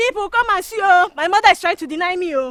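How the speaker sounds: high, very loud, accusing yell. In a drama scene, a character who is then told to stop shouting: shouting. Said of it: "stop shouting".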